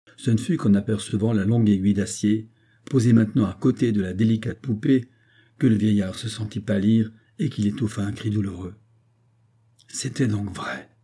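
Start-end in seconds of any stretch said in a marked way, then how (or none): 9.9-10.8 strained murmur pushed out with effort. The old man, seeing the steel needle beside the doll, is murmuring with effort. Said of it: "murmura-t-il avec effort".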